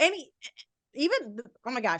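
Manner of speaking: stuttered false start, tripping over words. Speaker trips over words mid-sentence, stuttering. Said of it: "I'm stuttering so much".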